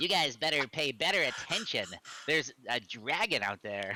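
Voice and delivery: squeaky, high, prepubescent halfling voice. A player speaks in character to the group during a game, squeaky prepubescent halfling voice. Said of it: "it comes out in a squeaky, uh, prepubescent halfling voice".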